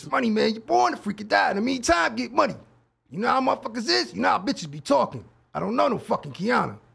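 creaky, rough, kept light. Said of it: "Try the D M X".

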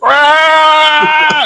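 very high, crying wail.

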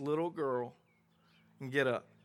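mock tender, gentle, coaxing call in sweet voice. Retelling how he tells the little girl to get up, in a sweet voice. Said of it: "he tells her in a sweet voice".

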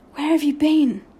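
private, secretive muttered aside. In class, while the teacher's back is turned, [name] speaks to Patrick under his breath. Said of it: "asked [name] under his breath".

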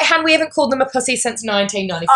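ordinary delivery

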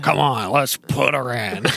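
rough, salty, gruff pirate-style sailor voice. Speaker mimicking how Roseanne was voiced, gruff sailor voice. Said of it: "talk like a gruff sailor".

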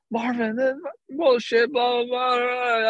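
play-acted, very high, all-out shrieking. Retelling a player screaming at the umpire: imitating Tulo screaming. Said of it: "absolutely screaming at Marvin Hudson".

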